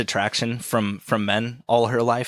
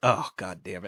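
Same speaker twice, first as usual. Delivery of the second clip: mock self-disappointed, low, quiet, sad self-reproach; 4 semitones lower, 5 dB quieter than usual. Retelling a story character's reaction afterwards, mock sad self-reproach. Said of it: "Like he's just sad with himself".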